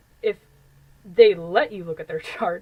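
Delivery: loud, laughing, speaking through laughter. Reading a passage aloud and admitting it applies to oneself: laughing while talking. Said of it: "I'm gonna laugh a little bit here".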